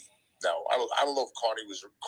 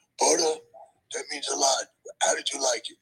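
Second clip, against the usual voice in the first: very high, rough, loud voice; 11 semitones higher, 5 dB louder than usual. Retelling what Jimmy answered at the bar after your first show, as a Jimmy Snuka impression. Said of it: "That's my impression of Jimmy".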